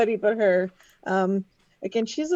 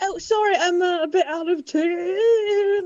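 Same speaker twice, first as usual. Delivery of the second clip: mock very slow, high, sheepish, embarrassed voice; 8 semitones higher than usual. Voicing a character who apologizes for being out of tune: embarrassed apology. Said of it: "trying to match it with her voice and her embarrassment".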